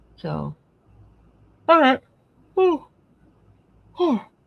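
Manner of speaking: talking through a loud, high-pitched yawn. Wrapping up a chat about patterns for viewers, yawning while talking. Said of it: "I'm yawning".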